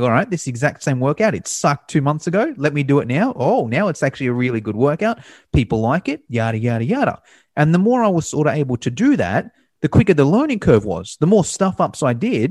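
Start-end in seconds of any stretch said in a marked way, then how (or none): none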